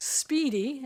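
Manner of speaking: "speedy" emphasized. Speaking to the council about a rushed report, stressing 'speedy'. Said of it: "I stress the word speedy".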